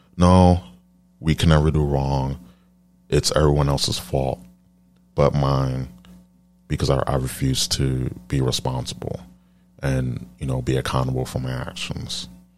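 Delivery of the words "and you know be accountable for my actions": normal talking voice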